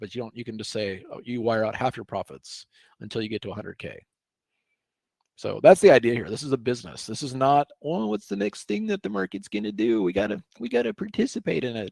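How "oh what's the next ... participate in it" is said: mocking, high, sing-song, overeager trader voice. Speaker mocks the market-chasing trader he used to be, mocking voice of eager trader. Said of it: "I'm saying that voice".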